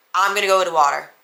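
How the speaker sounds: flat deadpan monotone. Retelling their reply to a man screaming at them: flat monotone. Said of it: "Like the most monotone voice".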